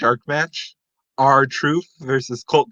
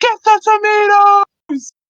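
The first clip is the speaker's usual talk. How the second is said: very high, loud yell, drawn-out "the"; 7 dB louder than usual. Telling the story of a wrestling short film, act out Triple H's line, retelling a yell. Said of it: "and he yells".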